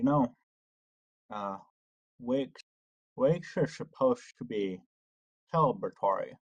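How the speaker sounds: slow, muffled speech, something held in the mouth. Voicing a character holding a penny in her mouth: muffled voice, something held in mouth. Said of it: "her voice is a little muffed up as if there was something in her mouth".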